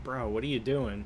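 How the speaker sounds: ordinary delivery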